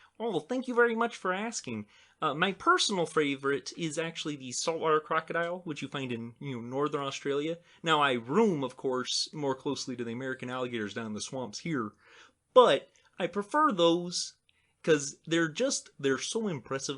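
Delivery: frog puppet voice, in character. Answering a question about a favorite crocodile: Kermit the Frog voice. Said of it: "can you do your Kermit voice".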